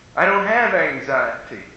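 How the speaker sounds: normal talking voice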